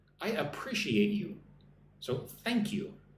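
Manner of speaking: usual speaking voice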